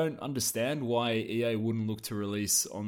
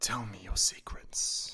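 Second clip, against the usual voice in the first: soft, slow, deliberate, hushed whisper; 4 dB quieter than usual. Acting out Giles Goddard catching a snowflake: whispering as Giles Goddard. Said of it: "He just whispers".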